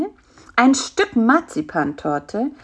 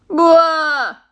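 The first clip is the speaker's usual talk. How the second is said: long, drawn-out groan; 6 semitones higher, 5 dB louder than usual. Bisi reacts when Karl-Heinz offers him a fig, groaning. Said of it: "stöhnte Bisi".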